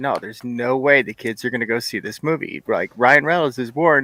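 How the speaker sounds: ordinary delivery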